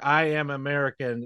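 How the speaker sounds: ordinary delivery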